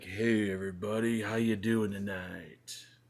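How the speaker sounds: smooth, laid-back, low-key radio-host voice. A show host demonstrates their radio talk for listeners, smooth low-key radio voice. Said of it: "it's very like low key".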